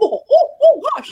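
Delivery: giddy laughing gasp.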